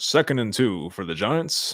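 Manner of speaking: slow, deliberate play-by-play sports announcer voice. Calling a Giants football play for the audience: put-on sports announcer voice. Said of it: "I gotta do the announcer voice".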